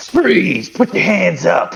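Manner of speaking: gruff, rough, slow, drawn-out intimidating shout. Confronting a suspect in a tabletop game: intimidating shouted command. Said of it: "is that the voice you're using to intimidate this guy?".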